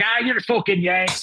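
startled, high-pitched, freaked-out woman's outburst. Retelling what a woman said on hearing them: imitating a woman's words. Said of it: "She's like".

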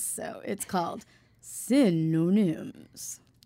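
game show host announcer voice. Introducing a game to the audience, trying out a game show host voice. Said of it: "I've been practicing my game show voice".

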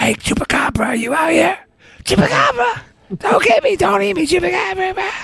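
very high, squeaky, half-whispery voice. Imitating Egghead calling out to the Chupacabra at night: imitating Egghead half-whispering. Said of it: "egghead whispering at night".

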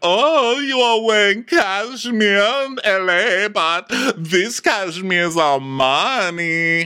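high, laughing put-on voice. Acting out a woman's reply to a man walking in wearing a cashmere sweater, imitating her laugh voice. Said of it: "she does her laugh voice".

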